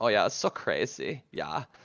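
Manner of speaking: put-on nerdy wizard voice with German accent. Doing the catchphrase of a player character made to be hated: Edreed's German voice. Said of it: "it's this German voice".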